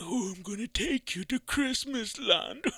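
creepy, leering voice. Mocking how that guy's voice sounds, put-on creepy pedophile voice. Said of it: "he sounds like a pedophile".

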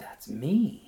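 deferential, very formal. Reading a woman's reply after she reads a word aloud, soft and deferential. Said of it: "she said softly with deference".

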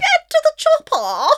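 posh shout, very high pitched and very loud. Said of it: "No, that's wrong".

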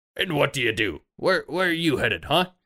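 gruff, high, pushy sailor voice. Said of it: "he says".

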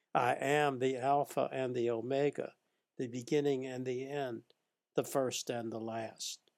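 plain

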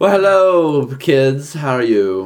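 loud, put-on, posh, highbrow English lady accent. Making up a character from England and greeting the kids, highbrow English voice. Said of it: "I'll make her highbrow".

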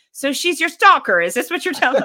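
fake loud high yelling. Retelling what a fellow announcer on the microphone yelled: imitating John yelling. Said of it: "John yells out".

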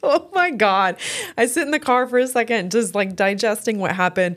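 speaking through laughter. Telling a story about sitting in the car afterward, laughing while telling. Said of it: "I'm laughing so hard like I am right now".

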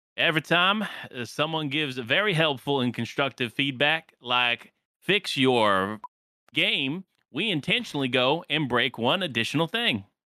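Southern US twang on the words. Voicing what a Fortnite back-end dev might say, imitating Evan with a southern twang. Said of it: "maybe I'll add a southern twang to it".

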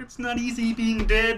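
high-pitched put-on frog puppet voice. Imagining what a jungle monster would say, in a Kermit the Frog voice. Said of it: "If he has the Kermit voice".

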